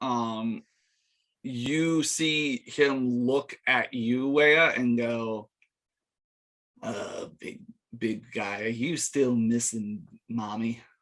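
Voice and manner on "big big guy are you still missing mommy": quick, rattled-off, taunting voice. Game master voicing a figure who turns to Wea: in Liam's voice. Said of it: "in Liam's voice, it's still his voice".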